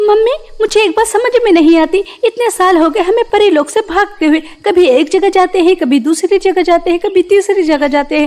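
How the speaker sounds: upset, stubborn, high-pitched angry outburst. A daughter speaks to her mother in an angry complaint. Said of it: "और तुम तो जानती ही हो [name] कितनी ज्यादा जिद्दी है। / नैना, मेरी प्यारी बच्ची".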